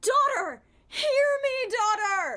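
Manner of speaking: emotional, loud and high-pitched calling out. Reading a written part, calling out to a daughter in an emotional voice. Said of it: "That was emotion in my voice".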